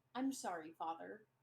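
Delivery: surprisingly soft, low-voiced delivery. A minute later, a character speaks to his father in a surprisingly soft voice. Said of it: "in a surprisingly soft voice".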